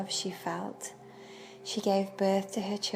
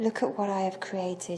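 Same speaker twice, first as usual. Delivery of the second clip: ordinary delivery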